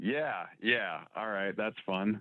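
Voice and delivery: very quiet, dry, sarcastic tone. Answering "isn't that fun?" about a second date update: sarcastic. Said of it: "he's also being sarcastic".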